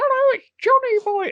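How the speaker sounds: put-on very high-pitched, funny small child's voice. Retelling a medium in her trance cabinet speaking as Johnny Boy, in a little boy voice. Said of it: "And she talks like that".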